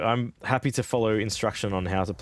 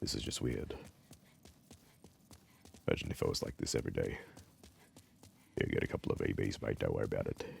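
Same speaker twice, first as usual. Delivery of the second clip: talking low, hushed, almost whispered; 13 semitones lower, 12 dB quieter than usual. Mid-game, noticing their own voice has changed, talking low. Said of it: "Why am I talking so low now?".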